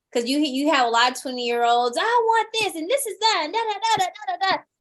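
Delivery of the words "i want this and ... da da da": loud shouting, pitched very high. Mimicking twenty-year-olds who speak their minds on a team: imitating someone shouting. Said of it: "You're just shouting".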